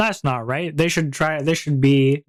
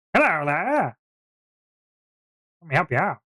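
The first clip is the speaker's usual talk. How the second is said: put-on odd, weird elderly shopkeeper voice; 3 semitones higher than usual. Recalling the shopkeeper they made for their players, in a weird old man voice. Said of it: "He talked like a weird old man".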